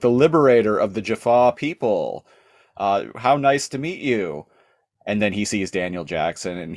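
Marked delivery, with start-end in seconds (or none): 0.0-4.5 thrilled, starstruck, excited, gushing tone. Retelling a show scene where Nereus greets Teal'c: imitating Nereus, so excited. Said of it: "He's, like, so excited".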